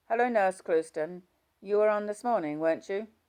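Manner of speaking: dry, emotionless, dead straight, no expression. Narrator voices an alcoholic woman on the ward greeting a nurse, deadpan. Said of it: "spoke to me in her deadpan voice".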